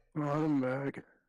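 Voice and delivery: miserable, glum tone. Announcing being back to the other speaker: sounding miserable. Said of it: "Why do you sound miserable?".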